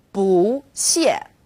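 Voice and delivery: "bu" in 不谢 said with rising second tone. Tone lesson, bu placed before another fourth tone: rising tone on bu. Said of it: "When bu is used before another fourth tone, it becomes second tone".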